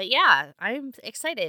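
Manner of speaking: very loud, high, thrilled excited exclamation. Reacting to casting announcements for the listeners: excited. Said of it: "I'm sure you guys can hear it in my voice".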